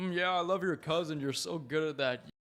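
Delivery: put-on laid-back American-accented voice. Mocking how Americans talk about British accents, in a mock American accent. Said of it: "And Americans be like".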